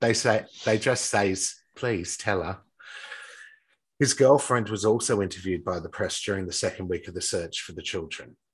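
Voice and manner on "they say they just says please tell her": clumsy, bad put-on English accent. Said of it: "Is that what you were trying to do?".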